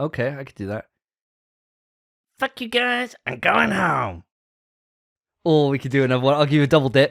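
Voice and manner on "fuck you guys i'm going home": very high character voice swooping up and down. Answering a request for an impression: Eric Cartman impression. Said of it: "Eric Cartman as your impression".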